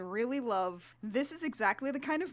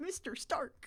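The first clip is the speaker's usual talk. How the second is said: mock sorrowful, hushed, breathy near-whisper; 3 semitones higher, 9 dB quieter than usual. Mocking English actors' American accents, quoting Tom Holland's line: mock-sad Tom Holland impression. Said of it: "when he sadly says".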